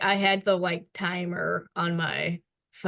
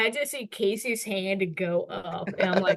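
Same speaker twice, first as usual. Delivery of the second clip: usual speaking voice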